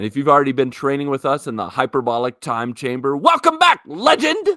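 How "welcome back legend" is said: very high, loud, emphatic all-caps delivery. Reading a welcome message written in all caps: reading in all caps. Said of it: "it's all caps. I had to read it like that".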